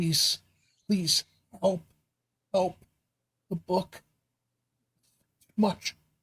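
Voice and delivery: weak, faint, strained male voice. Narrator voicing a voice heard inside the listener's head, strained faint male voice. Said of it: "it's a strained male voice saying".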